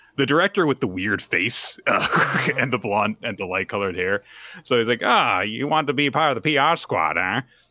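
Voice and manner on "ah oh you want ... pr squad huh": put-on higher-pitched, old-time gangster voice. Storyteller voicing Director Netsuki as they come to see him, Director Netsuki voice. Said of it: "he also talks like an old timey gangster".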